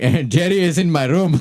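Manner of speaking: put-on non-native English accent. Retelling a hotel guest calling reception, imitating the guest's accent. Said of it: "I'm gonna pretend it's the accent".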